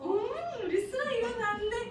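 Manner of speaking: high-pitched voice. Talking to a child who is getting up: high sol-tone voice. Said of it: "목소리 이렇게 해서 솔톤 딱 맞추세요".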